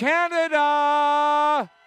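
slow, high, drawn-out announcer call.

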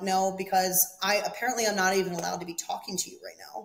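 plain

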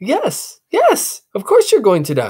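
high, swooping, eager, excited voice. Tiny answers the boy's anxious question, excited. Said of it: "Tiny responded with excitement".

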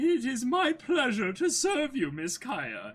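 put-on, sing-song goat butler character voice. Voicing the goat butler character, answering the one he serves: goat butler voice. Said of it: "the voice for the goat butler".

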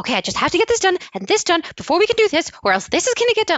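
very high, fast, anxious, overwhelmed voice. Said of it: "I get higher".

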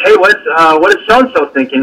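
normal talking voice

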